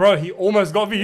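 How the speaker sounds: plain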